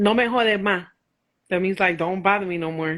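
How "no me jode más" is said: real, full-blown Puerto Rican woman accent. Asked for your best impersonation, you respond in Spanish, impersonating a Puerto Rican woman. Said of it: "give me your best your best impersonation of a Puerto Rican woman".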